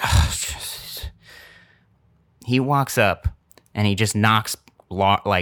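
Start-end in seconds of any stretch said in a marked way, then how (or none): 0.0-1.1 quiet, mumbled aside, muttered to oneself. Retelling how a man waiting behind walked up: imitating someone muttering. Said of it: "muttering to himself".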